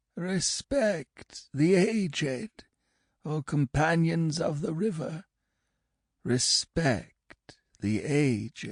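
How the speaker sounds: thick, muddy croak, very high quavering whine. Narrator reading a story, voicing the speaker: thick, muddy, croaking voice. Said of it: "It was a thick voice, a muddy voice".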